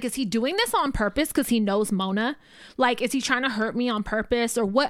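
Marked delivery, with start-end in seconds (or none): none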